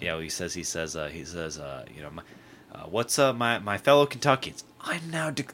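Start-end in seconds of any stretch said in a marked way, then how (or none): 2.1-5.5 jarring, high-pitched announcing voice. Imitating how Andy announces a special session: imitating Andy's jarring announcing. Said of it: "he does like that".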